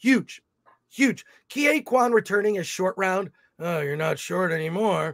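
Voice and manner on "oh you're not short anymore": low, hushed, soft movie-star voice. Imagining Short Round returning in the film: Harrison Ford voice. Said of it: "you are trying to do Harrison Ford's voice. I'm trying to do his voice".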